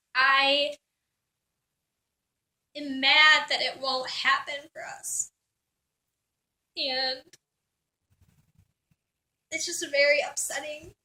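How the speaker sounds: trying not to cry, holding back tears. Confiding discouragement and anger to listeners, holding back tears. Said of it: "I'm trying not to cry".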